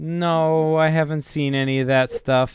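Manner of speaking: very disappointed, let down. Voicing a character who deflates, asked about magical items: super disappointed. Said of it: "super disappointed".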